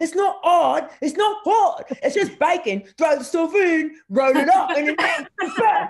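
very high, loud, cute lisp on every s. Imitating the TV chef Jamie, the Naked Chef: imitating Jamie Oliver's fast lisping talk. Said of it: "talked way too fast, ... the cutest little lisp".

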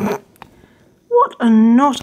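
very slow, drawn-out mock reproachful tone.

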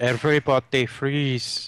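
put-on poor Austrian accent slipping into vaguely Indian accent. Recommending an old Batman movie, quoting its villain's line, Arnold Schwarzenegger impression. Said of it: "your Austrian accent was vaguely Indian".

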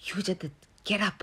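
quiet hiss under the breath. Narrator reads herself telling Yudhajit to get up in front of a guard, hissed. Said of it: "I hissed".

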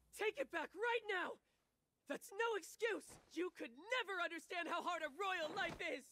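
hot-tempered, indignant, heated angry tone. A princess shouting back after her excuse is dismissed, shouting angrily. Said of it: "Stop shouting and sit your ass down".

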